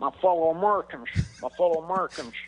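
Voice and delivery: high-pitched speechifying. Answering a remark that George W Bush was funny: George W Bush voice. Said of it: "George W Bush".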